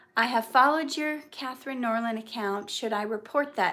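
ordinary delivery

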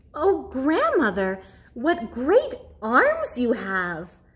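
amazed, marvelling exclamation, full of wonder. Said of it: "said the child in wonder".

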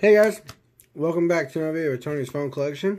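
speaking while chewing, mouth full of food. Opening a phone collection video while eating a cookie: talking with mouth full. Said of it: "Sorry, I'm eating a cookie".

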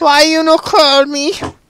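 clingy, possessive, very high put-on woman's voice.

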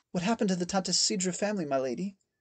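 quiet, trembling. A maid asks her lady what happened to the Tantasidra family, soft and tremulous. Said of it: "her voice soft and tremulous".

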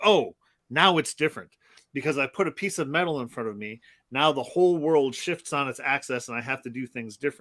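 plain

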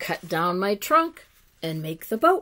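ordinary delivery

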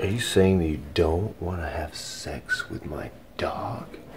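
soft, unvoiced whisper.

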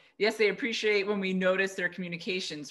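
ordinary delivery

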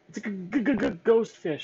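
terrified, very loud, very high, slow fearful cry. Narrating Sheldon answering Nemo after friends bolt from a cave, fearful. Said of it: "Sheldon replied fearfully".

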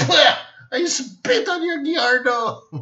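slow, tiny, cartoonish little kid voice. Retelling what a little kid said, the speaker uses a cartoonish kid voice. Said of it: "He speaks like a cartoon".

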